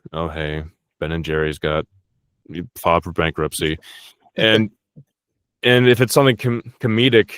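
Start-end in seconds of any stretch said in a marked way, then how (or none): 0.1-3.7 dead-serious, grave, low, sober delivery. Showing how he delivers serious news, like a bankruptcy, real serious. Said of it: "I'll just get down all real serious".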